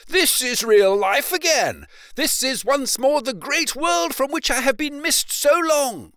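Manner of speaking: theatrical, boastful, excited, very high and loud. Reading the story aloud, Toad hears a familiar double note of warning approaching: excited Toad voice. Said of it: "and his pride and conceit began to swell within him. / he said to himself as he marched along with his chin in the air".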